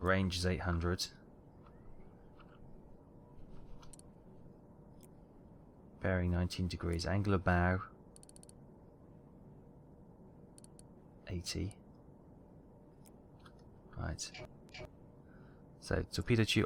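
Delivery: soft, hushed, under-the-breath whisper. Working through a torpedo setup, whispering without knowing why. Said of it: "I don't know why I'm whispering".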